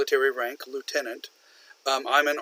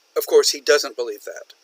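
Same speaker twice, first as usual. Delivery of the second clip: plain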